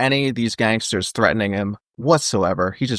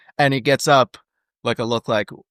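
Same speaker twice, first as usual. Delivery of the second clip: ordinary delivery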